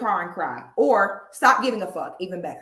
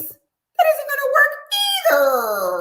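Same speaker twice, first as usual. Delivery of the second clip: much higher, louder, high-pitched mock voice. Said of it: "went from a high-pitched voice".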